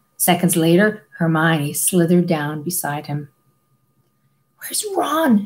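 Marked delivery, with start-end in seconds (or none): 4.6-5.5 terrified, frightened whisper, much higher. Having slid down into a low tunnel beside her companion, she asks in a terrified whisper. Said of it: "she whispered in a terrified voice".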